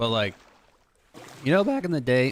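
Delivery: sudden breaking voice. Talking about candy, the speaker's voice cracks mid-sentence, voice cracking. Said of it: "voice crack".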